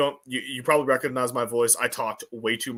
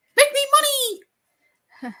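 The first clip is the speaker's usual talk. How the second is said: high, squeaky voice with bouncy lilt; 5 dB louder than usual. Speaker ranting, then suddenly doing a Mickey Mouse impression. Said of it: "That was my Mickey Mouse impression".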